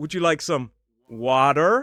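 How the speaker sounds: strongly exaggerated, put-on American accent. Father retelling how his son showed off a language: very american accent. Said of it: "In a very American accent".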